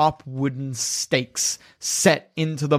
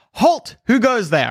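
pitched-up sentry voice calling out; 5 semitones higher, 3 dB louder than usual. Voicing a guard on the gateway platform who challenges travelers: guard calling out from a gateway. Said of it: "you hear a voice calling out from the gateway".

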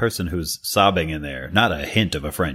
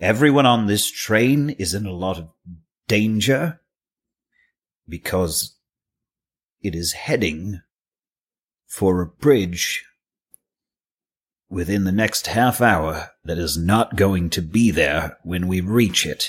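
carefully enunciated, very clear, pointed delivery; 3 semitones higher than usual. In a role-play scene, a character addresses Alejandro on the train, a little louder. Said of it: "I'm going to say this a little louder".

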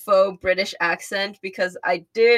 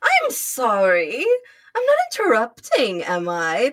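haughty fake British accent, swooping, laid on thick; 2 semitones higher than usual. Chatting about a robot character's wings, then voicing him: haughty Starscream voice. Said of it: "That's my Starscream voice. ... a very haughty voice ... a faux British accent".

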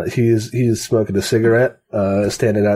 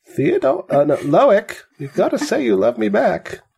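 put-on old lady voice, much higher; 11 semitones higher than usual. Reenacting a movie scene with friends, in an old lady voice. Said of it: "That's my old lady voice".

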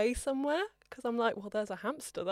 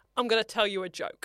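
put-on menacing tone, louder; 4 dB louder than usual. Retelling telling someone a joke: imitating a threatening tone. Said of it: "That sounds like a threat".

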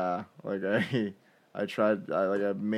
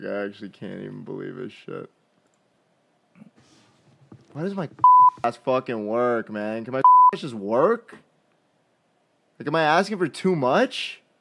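very loud, swooping, furious angry rant; 4 semitones higher, 9 dB louder than usual. Before the podcast, upset about something that just happened, so mad. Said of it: "I'm so fucking mad".

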